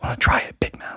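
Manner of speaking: breathy whisper close to the ear. Voicing an unseen figure who speaks into a character's ear: whispered. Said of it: "you hear whispered in your ear".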